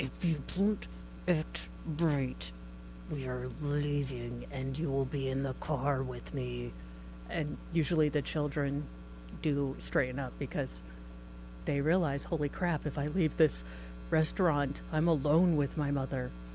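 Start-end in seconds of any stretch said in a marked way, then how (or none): 0.0-6.7 mock hushed menacing voice through gritted teeth. Acting out a parent warning their child in a restaurant, imitating a quiet clenched-teeth threat. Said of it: "that quiet clenched teeth".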